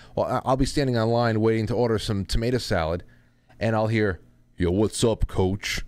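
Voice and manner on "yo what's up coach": low, deep baritone-to-bass register voice. A former Little League coach retells old players greeting him: baritone-to-bass voice. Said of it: "In this these baritone to bass voices".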